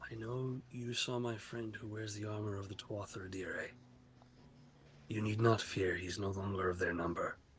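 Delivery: low, very quiet whisper. A game master's character whispers into a player's ear, whispering. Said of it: "And he whispers in your ear".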